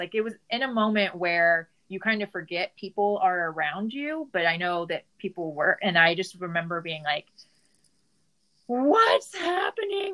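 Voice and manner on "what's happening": put-on, very high-pitched, panicked crying. Speaker recalls standing outside the workout place, imitating panicky high-pitched crying. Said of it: "very panicky, like high pitched voice".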